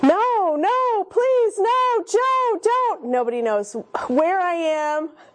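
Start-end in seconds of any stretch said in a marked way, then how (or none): 0.0-3.1 very high, drawn-out, panicked screaming. Speaker retells screaming at a large man coming after a kid, retelling a panicked scream. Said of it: "and I'm screaming".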